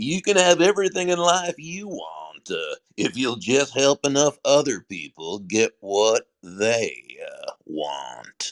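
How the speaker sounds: swooping Mississippi Southern drawl, laid on thick. Quoting Zig Ziglar's famous saying to someone, in Zig Ziglar's Mississippi Southern drawl. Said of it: "that wonderful Yazoo, Mississippi Southern drawl".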